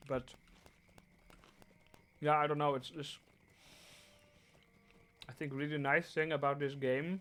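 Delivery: speaking with mouth full. Streamer commenting on the game while eating: talking while eating. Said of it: "Sorry for talking while eating".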